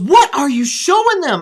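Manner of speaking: demanding, high-pitched yelling. Retelling how Sandra reacted to a violent cowboy scene: imitating Sandra yelling. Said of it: "And she yells at me".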